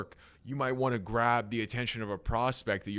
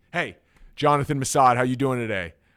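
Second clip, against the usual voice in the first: booming, very loud voice full of energy; 2 semitones higher, 10 dB louder than usual. Showing how to open a sales call: high energy greeting. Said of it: "I like to start with high energy".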